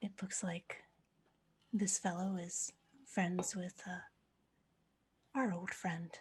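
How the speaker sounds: soft, quiet, murmured lean-in aside. A player's character leans in to a companion, saying it quietly. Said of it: "just say quietly".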